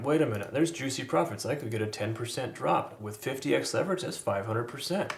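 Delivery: voice dripping with heavy sarcasm. Speaker voicing what viewers are probably thinking, mock-sarcastic. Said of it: "you can hear the sarcasm in my voice".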